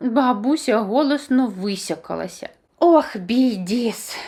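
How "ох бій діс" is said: words moaned out in a groan. The grandmother groans right after blowing her nose: groaning. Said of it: "простогнала вона".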